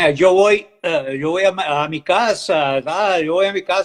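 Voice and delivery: slow Spanish with a home-grown local accent. Showing how Spanish sounds as spoken locally: local Spanish accent. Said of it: "Você tá falando espanhol, mas é um espanhol, eh, daqui".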